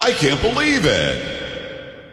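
very slow, heavily drawn-out, dripping sarcasm. Naming a news file title aloud: very sarcastic. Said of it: "Being very sarcastic".

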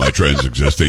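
deepest possible, very low voice. Quoting a line from a clip: imitating a very low voice. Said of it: "He drops his voice as low as he can".

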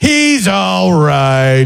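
very condescending, patronizing, talking-down tone. Imitating what people say when their dog barks at the scared speaker, mock-condescending. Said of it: "People would say this super condescending".

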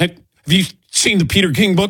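fast, high-pitched, panicked voice.

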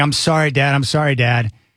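mock hysterical, uncontrollable sobbing. Father retells his daughter's phone call to him, imitating her crying hysterically. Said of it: "like crying uncontrollably".

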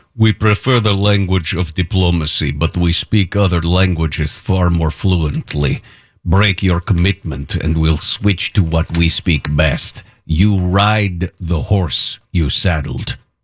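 put-on Russian accent throughout. Reading out what the president said, in a put-on Russian accent. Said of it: "I'm going to do it with a Russian accent".

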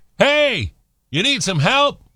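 shrill, very high, loud yelling shout. Telling a joke, voicing a fisherman offering help: yelling. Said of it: "A fisherman yelled".

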